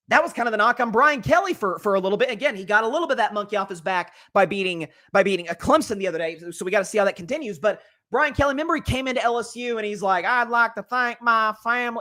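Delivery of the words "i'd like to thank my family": slow, fake Southern accent, drawled. Imitating Brian Kelly arriving at LSU: Brian Kelly's fake Southern accent. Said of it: "He's faking the Southern accent".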